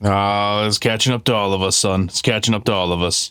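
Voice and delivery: gruff, grizzled voice. The agents' boss, sipping hot chocolate at his desk, answers them, gruff boss voice. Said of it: "you see your boss, a gruff, bearded, grizzled kind of man, / you see your boss, a gruff, bearded, grizzled kind of man, sitting at his desk, sipping a hot chocolate, stirring it with a candy cane. / g".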